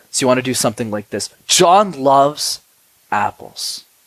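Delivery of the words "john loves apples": quick then slow delivery. Showing how to say a line: quick then slow pacing. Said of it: "notice how I went quickly and s- slowly".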